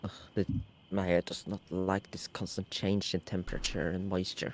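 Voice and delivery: mumbling under breath. Voicing a character stroking her hair as she walks: mumbling to herself. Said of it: "as you walk and mumble to herself".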